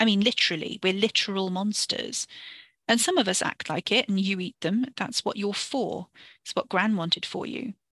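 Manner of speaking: ordinary delivery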